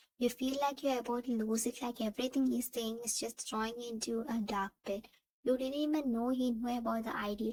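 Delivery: ordinary delivery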